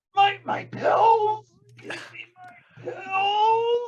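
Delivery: croaking voice. Voicing a dying man who moans and grabs at a character, in a croaking voice. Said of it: "and in a croaking voice".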